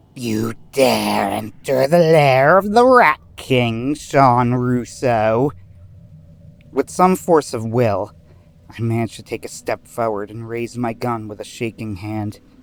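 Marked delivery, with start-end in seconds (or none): 0.2-5.5 slow, drawn-out, utterly vile villain voice. Narrator reads the Rat King addressing the narrator in his lair, disgusting Rat King voice. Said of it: "I heard the Rat King's disgusting voice".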